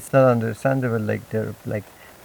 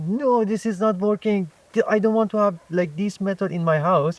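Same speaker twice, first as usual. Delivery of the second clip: mock heated, high, worked-up yell; 8 semitones higher than usual. Retelling yelling at housemates over the unplugged freezer: imitating someone yelling. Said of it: "You are yelling like".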